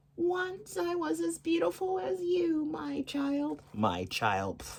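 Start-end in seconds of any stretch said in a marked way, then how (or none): 0.2-3.6 put-on very high, slow old crone voice. Reading a fairy tale aloud, the queen at the door: old crone's voice. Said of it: "the queen said in her old crone's voice".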